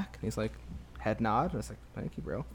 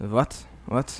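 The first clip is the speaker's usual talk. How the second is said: put-on butchered Russian accent; 4 dB louder than usual. Retelling a man's reply when asked to borrow a ball, bad Russian accent. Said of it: "no disrespect to the Russian accent".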